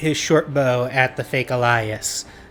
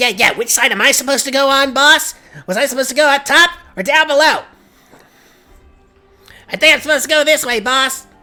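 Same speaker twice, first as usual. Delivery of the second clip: loud, very high, put-on goblin voice; 14 semitones higher, 7 dB louder than usual. Running a tabletop fight, the narrator voices an enemy in goblin voice. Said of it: "This goblin goes".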